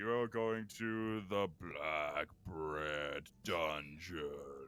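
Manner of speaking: low, very slow droning zombie voice. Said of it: "doing a zombie walk toward you".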